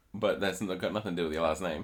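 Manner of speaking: ordinary talk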